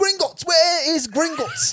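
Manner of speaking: acted shrill scream in a British accent. Retelling arriving at Harry Potter World: imitating own past British-accent scream. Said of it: "I'm just screaming".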